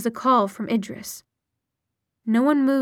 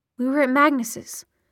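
usual speaking voice

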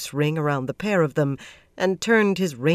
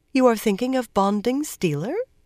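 innocent-sounding, pitched-up tone; 6 semitones higher than usual. A narrator reads one woman's question to another, asked in an innocent voice. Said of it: "asked in an innocent voice".

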